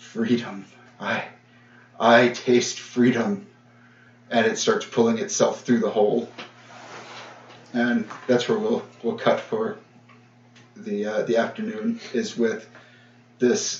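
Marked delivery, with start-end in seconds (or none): 0.0-3.5 ancient dragon voice, slow, deliberate and drawn out. Storyteller voicing something in the caldera: deep voice that shakes you. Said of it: "this deep voice that that just shakes you to your core says".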